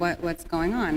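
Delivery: ordinary delivery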